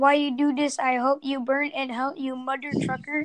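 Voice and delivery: ordinary talk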